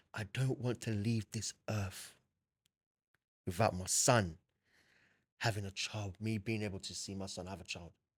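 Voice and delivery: weeping, tearful, crying voice. Retelling what his crying mum said in the room: imitating his crying mum. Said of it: "She was crying".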